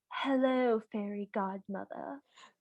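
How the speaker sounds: put-on soft, sultry, bored mid-Atlantic accent. Recapping Cinderella calling for help, imitating a sultry, bored Fairy Godmother. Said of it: "she's both like very sultry and also like very bored".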